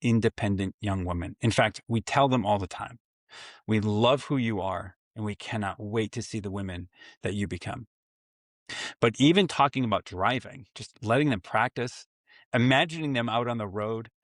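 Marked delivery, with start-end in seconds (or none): none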